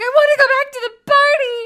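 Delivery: shrill, very loud, very high teary wailing breakdown. Retelling what she said on the toilet, imitating her losing it. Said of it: "she just totally lost it on the toilet".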